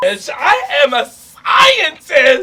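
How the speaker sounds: exaggerated loud, slow, high-pitched shouted outburst.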